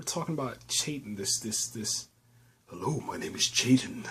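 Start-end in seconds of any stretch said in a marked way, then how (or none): 2.7-4.0 crazy very deep, loud, projected bass voice. Recapping a story about Chayton attacking a marine convoy, Chayton's very deep voice. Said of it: "You know how crazy deep voice this dude is".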